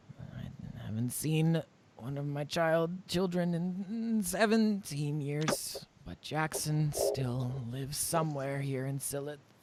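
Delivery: put-on elderly woman voice. An old woman tells a visitor about her son Jackson, in an old woman voice. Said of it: "this very old, frail-looking woman".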